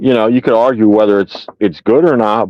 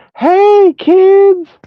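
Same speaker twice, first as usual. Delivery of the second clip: creepy, very high monster voice; 4 dB louder than usual. Retelling a meme where the creepy Poltergeist II demon greets kids: creepy Poltergeist II demon voice. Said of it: "the evil, like, demon guy".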